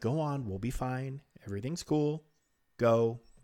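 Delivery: put-on, mock calm and reassuring tone. Recapping an episode, speaker acts out a character's reply, retelling in a reassuring tone. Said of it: "in a very like reassuring tone almost".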